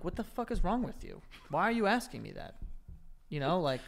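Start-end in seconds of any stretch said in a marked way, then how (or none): none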